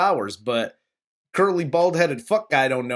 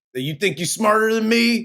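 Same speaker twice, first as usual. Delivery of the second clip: put-on, challenging voice, pitched up high; 6 semitones higher than usual. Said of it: "trying to do his best Danny DeVito from Taxi impression".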